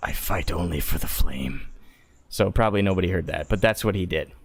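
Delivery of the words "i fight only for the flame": private, quiet whisper under the breath. Voicing a character in the game, speaking to oneself: whispering to oneself. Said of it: "I'm gonna whisper to myself".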